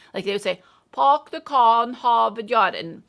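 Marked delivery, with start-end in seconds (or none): 0.9-2.7 loud, exaggerated Boston accent with dropped r's. Explaining us accents, showing how people from boston would say it, exaggerated boston accent. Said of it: "I'm kind of exaggerating it".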